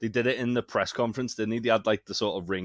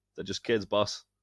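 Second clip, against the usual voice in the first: usual speaking voice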